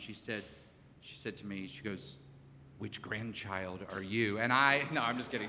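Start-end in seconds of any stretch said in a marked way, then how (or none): 2.8-4.4 put-on heartfelt whisper, quieter, much lower. Retelling what a woman leaned down and whispered into your ear, retelling a heartfelt whisper. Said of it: "leaned down and whispered into my ear in a very heartfelt tone".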